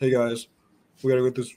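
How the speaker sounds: loud, flat, wooden, monotone dude-bro bark. Imitating how the actor talks and walks around: Channing Tatum dude bro accent. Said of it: "this kinda dude bro accent".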